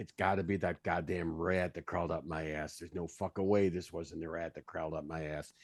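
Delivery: low, angry grumbling kept under the breath. A player voicing his character while staying on someone's heels, muttering under his breath. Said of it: "as under my breath as I can".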